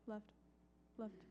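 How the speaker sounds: quietest possible, barely audible whisper. Retelling how dad gave directions on the interstate, in the quietest voice possible. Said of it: "in the quietest voice he could".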